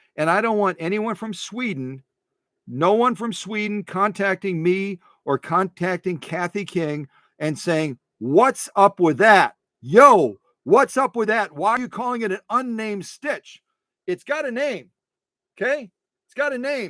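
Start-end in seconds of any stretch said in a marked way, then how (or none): 8.2-16.9 high, pushy, aggressive, indignant griping. Imagining a viewer from Sweden objecting to the stitch name, mock-aggressive complaint. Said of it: "I'm getting all aggressive here".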